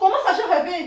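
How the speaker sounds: loud, high-pitched shouting. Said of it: "tu cries comme ça".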